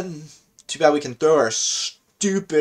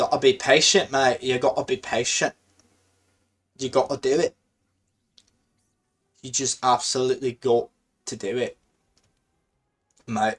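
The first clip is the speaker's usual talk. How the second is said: unclear put-on Australian or British accent, quieter; 3 semitones lower, 4 dB quieter than usual. Speaker urging himself to be patient, in an Australian-or-British accent. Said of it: "I don't know what accent that was. It was Australian or British".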